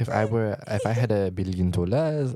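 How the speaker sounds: put-on French accent. Answering what to buy with a billion dollars: french accent. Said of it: "try to do a French accent".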